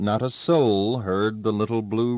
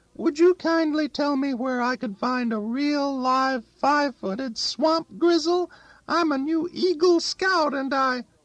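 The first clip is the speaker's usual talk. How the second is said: put-on very high, boyish soprano voice. Narrator reading a character's put-on greeting to a neighbour, in a boy's soprano voice. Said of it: "he said in a boy's soprano voice".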